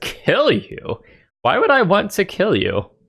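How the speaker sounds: very high, startled, astonished giant voice. Voicing a giant who is asked whether he will kill them: surprised giant voice. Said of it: "a surprised look on his face and says".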